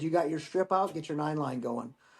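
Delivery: ordinary delivery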